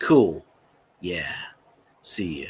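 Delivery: laid-back, mellow, very low, slow drawl. Describing a YouTuber's way of talking, imitating a mellow voice. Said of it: "He talks mellow".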